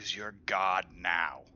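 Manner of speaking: soft, quiet whispering. Speaking to a severed ant body part in the game: whispering very quietly. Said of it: "I will whisper to it very quietly".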